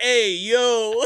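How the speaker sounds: put-on loud, blurting little toddler-style voice. Retelling how they kept copying the child: imitating a toddler saying hey yo. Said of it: "We kept on going".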